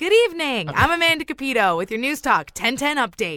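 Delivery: upbeat newsreader voice.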